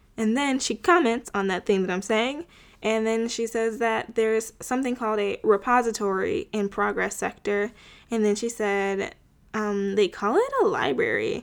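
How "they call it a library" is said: put-on confused tone. Retelling what a character said about a library: imitating a confused tone. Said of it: "she said it in such a confused tone".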